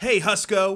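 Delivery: very loud, high-pitched yell. In a role-play, [name] shouts at a fellow called Husco: [name] shouting. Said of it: "[name] shouts in his voice".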